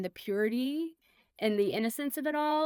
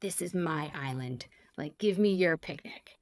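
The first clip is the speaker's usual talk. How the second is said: put-on low, furious, angry monkey voice; 5 semitones lower than usual. Retelling how the monkey in the tree stared at them: voicing a mad monkey. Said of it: "and he is mad".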